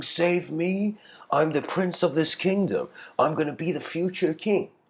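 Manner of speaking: acted, high-pitched speech through laughter. Retelling a story, acting out the prince mocking a sage's offer: laughing while speaking. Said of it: "the prince starts laughing".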